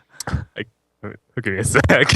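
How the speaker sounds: speaking while laughing throughout. Trying to ask the next question while cracking up, laughing while talking. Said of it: "I'm laughing".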